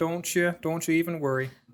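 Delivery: put-on Canadian-accented voice. Reassuring his bud during a podcast bit, in a Canadian accent. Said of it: "speaking with your Canadian".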